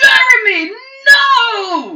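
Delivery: very high, very loud shriek. Narrating the story, as the Goblin King reacts to the wounded fighter: Goblin King shriek. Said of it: "the Goblin King shrieks and says".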